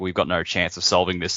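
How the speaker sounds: ordinary delivery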